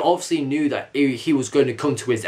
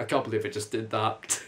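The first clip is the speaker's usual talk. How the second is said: normal talking voice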